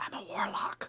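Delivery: very quiet, hushed, barely audible whisper. Telling a secret in character to a listener: very quiet voice. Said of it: "She says this very quietly".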